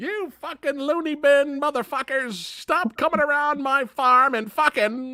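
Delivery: very high-pitched, kooky, unrestrained cursing rant. Retelling a movie scene where Ethel yells at people: imitating Ethel. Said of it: "she's like".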